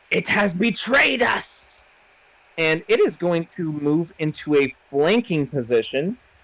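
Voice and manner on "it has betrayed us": high, hissing, monster-like creature voice. A game master voices the Erdofan Death Scout on its turn, hissed out. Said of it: "it hisses out".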